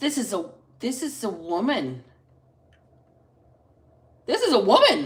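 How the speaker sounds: stunned, shocked, caught off guard, swooping pitch. Describing the energy picked up during a reading: shocked. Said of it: "Sorry I sound so shocked".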